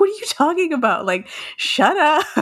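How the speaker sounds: sudden shocked exclamation.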